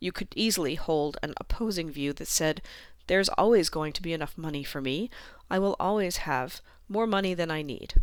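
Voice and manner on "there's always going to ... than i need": ordinary delivery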